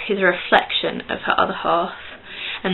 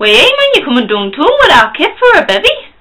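very loud, swooping, badly done Geordie accent; 9 semitones higher, 8 dB louder than usual. Addressing Nikki with a put-on accent: bad Geordie accent. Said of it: "me doing Geordie very badly".

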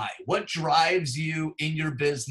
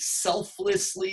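strong stress on the word 'selflessly'; 4 semitones higher than usual. Describing how council volunteers serve, stressing 'selflessly'. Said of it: "I emphasize the word selflessly".

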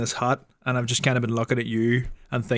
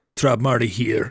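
put-on pirate voice, lower pitch. Repeating a line while friends coach an accent, in a pirate-sounding voice. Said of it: "You sound like a pirate".

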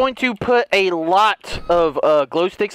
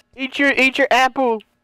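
ordinary talk

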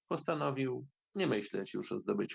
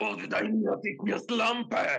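terrible, shrill, very high, loud devilish shriek; 11 semitones higher, 5 dB louder than usual. Enraged Reoender, after kicking Aladdin in the head, screams in a terrible devilish voice. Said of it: "Wrzasnął takim strasznym i szatańskim głosem".

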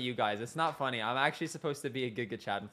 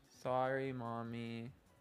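soft, earnest, sincere, meaning every word; 3 semitones lower, 9 dB quieter than usual. Showing the other person how to apologize, speaker models a sincere apology. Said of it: "Say it with sincerity".

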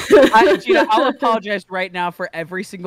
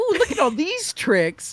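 high, mock giddy delight. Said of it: "I used to be like".

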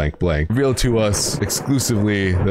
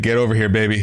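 angry, cross cartoon bird voice, calling out; 3 semitones higher than usual. Describing a painting of a bird and a baby: voicing an angry bird. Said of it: "there's an angry bird. And he's all like".

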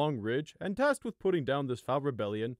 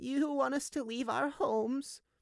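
put-on shaking old voice, much higher; 11 semitones higher, 3 dB quieter than usual. Narrating a story, an elderly ewe questions the guard: shaking old voice. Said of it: "the ewe asked in a shaking voice".

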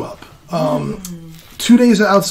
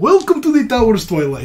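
put-on swooping Russian accent in a dwarf voice; 4 semitones higher than usual. Voicing a dwarf innkeeper greeting guests: russian accent for a dwarf. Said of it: "My Russian is much better".

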